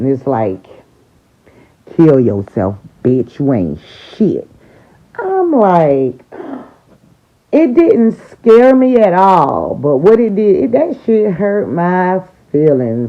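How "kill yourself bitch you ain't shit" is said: mean, vicious, nasty, angry little-man voice. Retelling a voice heard in the head: imitating a nasty, angry voice. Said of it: "it said so nasty and so meanly".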